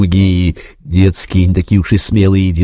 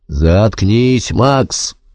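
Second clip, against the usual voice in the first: growled, growling voice; 2 semitones higher than usual. A narrator reads Albin speaking to Max, growled. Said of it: "прорычал Альбин".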